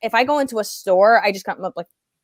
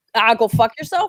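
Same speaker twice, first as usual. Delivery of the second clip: put-on rough, gruff, dismissive New York accent. Retelling how a nice but scary man talked: imitating a gruff New York voice. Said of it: "this gruff New York".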